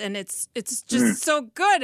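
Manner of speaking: very loud, swooping, bursting with excitement. Sharing thoughts with another speaker in conversation: really excited. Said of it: "I'm just getting really excited".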